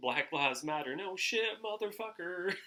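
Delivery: hell-yeah bro delivery. Retelling how a man said it, in a mocking hell-yeah-brother tone. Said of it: "the most hell yeah brother tone of voice".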